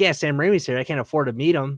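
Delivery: ordinary talk, nothing marked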